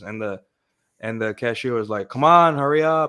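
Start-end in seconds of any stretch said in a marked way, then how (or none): 2.1-3.1 put-on impatient Chicago accent, higher, louder. Telling about ordering pizza while the cashier rushed: imitating an impatient chicago cashier. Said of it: "in the accent".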